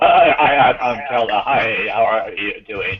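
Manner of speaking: flat, robotic monotone. Imitating a glitching voice on the call: robotic Agent Smith voice. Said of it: "It was all going Agent Smith".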